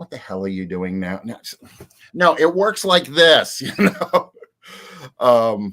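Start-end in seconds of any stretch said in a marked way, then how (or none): 0.0-3.6 loud, swooping, extremely sarcastic, heavy-handed delivery. Describing a character named Scully, acting out her line: sarcastic Scully voice. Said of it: "this one is extremely sarcastic and just like".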